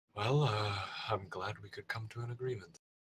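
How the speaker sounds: hushed mutter, under the breath. Speaking in character while feeling one's neck: muttering under breath. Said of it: "kinda under my breath say".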